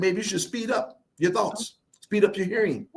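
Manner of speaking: ordinary talk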